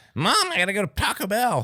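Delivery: put-on very high squeaky teen voice. Imitating a teenager talking to their mom, in a squeaky teenager voice. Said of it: "squeaky teenager voice".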